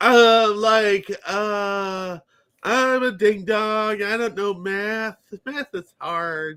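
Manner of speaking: high, slow, mocking ditzy woman voice.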